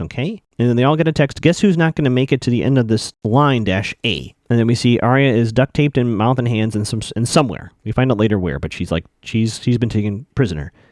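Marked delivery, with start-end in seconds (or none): none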